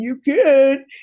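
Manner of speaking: put-on deep voice. Retelling a friend's reply, imitating Big A's deep voice. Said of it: "so I tried to talk like him".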